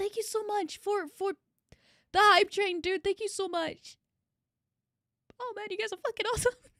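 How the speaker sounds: crying happy tears. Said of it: "These are happy tears".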